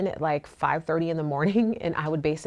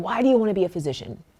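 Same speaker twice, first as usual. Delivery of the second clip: put-on gruff old man voice, higher; 3 semitones higher, 4 dB louder than usual. Retelling a question from an older physician sponsor: gruff old man voice. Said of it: "In this old, like, gruffy voice".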